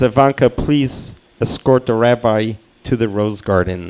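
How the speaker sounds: ordinary delivery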